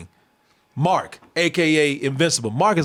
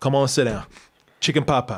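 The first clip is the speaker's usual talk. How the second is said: put-on nonchalant, unbothered tone, lower; 3 semitones lower than usual. Imitating a cartoon mom answering her returned husband: imitating an unbothered mom. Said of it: "she's seen it all. She doesn't care".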